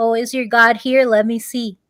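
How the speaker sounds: ordinary talk, nothing marked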